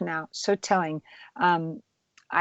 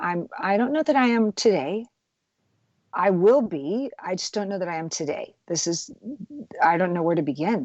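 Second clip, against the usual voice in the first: choked up, voice catching and breaking. Recalling telling someone about losing everything in a fire: choked up with emotion. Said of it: "this gets me choked up just to even say it".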